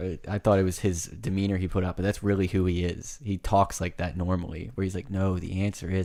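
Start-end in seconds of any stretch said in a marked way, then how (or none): 5.1-6.1 slow, deliberate talk. Imitating a quiz host giving the answer: imitating slow speech. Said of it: "he says it real slow".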